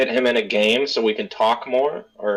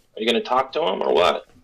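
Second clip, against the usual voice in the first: voiced stage half-whisper. Voicing a character who pokes another and asks: half-whispering. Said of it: "And she whispers".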